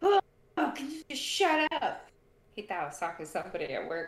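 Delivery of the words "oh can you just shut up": sudden, put-on, high, annoyed, fed-up yell. Retelling snapping at someone over loud chewing: imitating own past yell. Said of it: "I literally yelled out".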